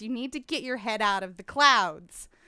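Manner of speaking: put-on yelling voice. Retelling a film scene of a sister being scolded: imitating Marianne yelling. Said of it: "Marianne is yelling at her younger sister".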